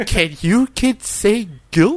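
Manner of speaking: soft, dramatic, undermining, condescending tone. Hosts parodying a children's show, addressing the kids, soft, dramatic, undermining tone. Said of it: "soft, dramatic, slightly, like, undermining tone".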